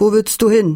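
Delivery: ordinary delivery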